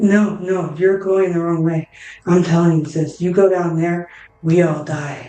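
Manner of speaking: whispered voice. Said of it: "almost like whispering in your ear".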